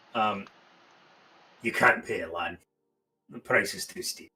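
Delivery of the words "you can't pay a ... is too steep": soft, theatrical stage whisper meant to carry. Repeating the line for a listener who missed it, in a stage whisper. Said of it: "Stage whisper".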